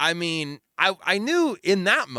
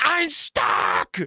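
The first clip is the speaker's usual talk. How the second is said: put-on very high, distressed child's wail; 9 semitones higher than usual. Retelling a small child on a plane: imitating a child screaming. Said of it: "as he's screaming".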